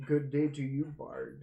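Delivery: rough, worn, rich and gruff voice. Narrator voicing an unseen speaker greeting the bard, in a very low, gruff voice. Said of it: "a voice that sounds very low, very gruff, as if it had been carved through heavy drinking and smoking".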